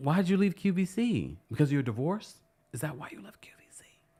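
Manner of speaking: hushed whisper. Asking someone why they left QVC, whispering. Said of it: "Why am I whispering?".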